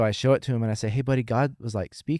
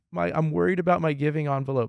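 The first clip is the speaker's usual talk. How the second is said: mock sobbing, much higher pitch; 5 semitones higher than usual. Retelling what a devastated person said while crying; imitating someone crying. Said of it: "He's crying his eyes out like".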